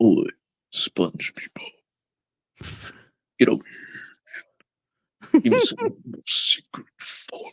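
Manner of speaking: creepy, breathy whispered voice. Doing a creepy cartoon parody for a laughing listener: creepy Meat Canyon Mister Krabs voice. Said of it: "a creepy, like, meat canyon, like, uh, like, Mister Krabs".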